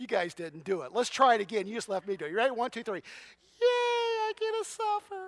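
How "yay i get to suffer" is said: squeaky, very high, fake falsetto. Leading a group to repeat a phrase together, the speaker uses a fake falsetto. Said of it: "that fake falsetto".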